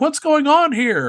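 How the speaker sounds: high, loud yelling.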